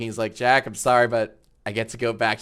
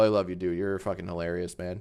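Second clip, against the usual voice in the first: usual speaking voice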